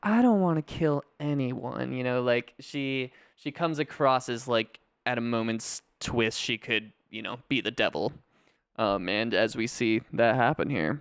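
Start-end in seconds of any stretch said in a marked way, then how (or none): 0.0-1.9 sweet, gentle, mild-mannered, cutesy little voice. Describing a film character, imitating a soft-spoken voice. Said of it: "so soft-spoken".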